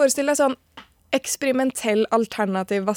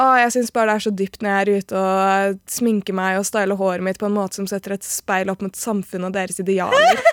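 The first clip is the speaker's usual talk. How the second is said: ordinary talk, nothing marked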